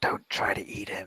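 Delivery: hushed, quiet whisper. Speaking in character to her as she walks by, in a whisper. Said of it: "I whisper to her".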